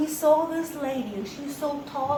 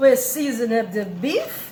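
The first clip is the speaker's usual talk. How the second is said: loud, put-on touch of French accent; 2 semitones lower, 6 dB louder than usual. Going forward, speaker speaks a little French accent here: put-on French accent. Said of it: "we speak a little French accent here".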